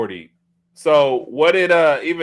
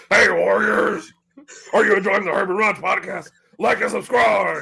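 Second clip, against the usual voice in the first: rough, high pro-wrestling promo delivery; 8 semitones higher than usual. Asked on a podcast for your best one, do an Ultimate Warrior impersonation. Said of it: "Give me your best Ultimate Warrior impersonation".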